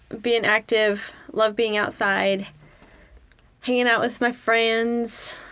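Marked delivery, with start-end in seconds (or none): 3.6-5.3 very strong, super Southern accent. A student listing hobbies at school, the words come out super southern. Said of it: "I sound super Southern on that one".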